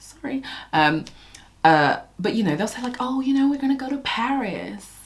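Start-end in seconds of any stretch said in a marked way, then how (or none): 3.0-4.8 terrible fake American accent, pitched up. Quoting what people say in American shows, terrible American accent. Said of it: "This is a terrible accent".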